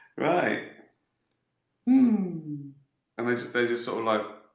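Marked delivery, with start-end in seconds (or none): 0.2-2.7 high, chuckling, laughing through words, drawn-out hmm. Playing a detective called Lieutenant Javumbo at a murder scene, laughing while talking. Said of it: "Why is he laughing?".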